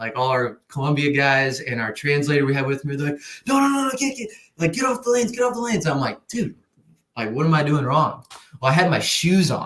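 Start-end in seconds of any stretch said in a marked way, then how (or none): 3.5-5.9 mock yelling, much higher and slower. Retelling how the guys yelled at the speaker on the lanes, retelling a yell. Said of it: "all the guys are like yelling at me".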